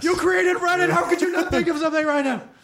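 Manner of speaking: high-pitched, furious screaming. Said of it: "just screaming at their headphones".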